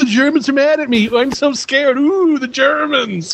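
high-pitched, mocking, taunting tone. Quoting a favourite character mocking the Germans: imitating Mister Burns mocking. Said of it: "only he could mock the Germans".

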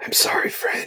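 soft, hushed, breathy whisper. Speaking in character to a fallen raven: whispering. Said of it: "And I whisper".

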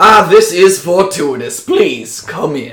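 put-on Southern US gentleman's accent. Voicing the town mayor welcoming travelers into his home: southern accent. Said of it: "fans himself because Southern".

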